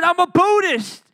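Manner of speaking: loud, high-pitched screaming. Recounting a man who screamed in his face, reenacting a man screaming. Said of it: "one dude screaming my face".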